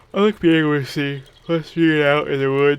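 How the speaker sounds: words pushed out yawning. Speaking into the mic; yawning while talking. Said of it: "as I'm yawning into the mic".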